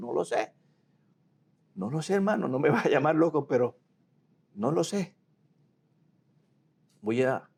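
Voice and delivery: high voice catching, choked up with emotion. Speaker recounts arriving at his brother's in-laws' house, choked up with emotion. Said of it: "pues ya me emociono".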